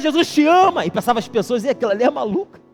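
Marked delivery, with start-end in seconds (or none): 0.0-0.8 high, repeated, public proclaiming shout. Speaker retells a woman shouting in a city center: imitating someone shouting. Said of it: "ela continuou a gritar".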